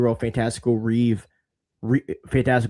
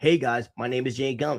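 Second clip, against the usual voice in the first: put-on announcer voice, quieter; 5 dB quieter than usual. Mocking a video announcement by James Gunn: imitating James Gunn. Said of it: "all James Gunn has to do is put out a video".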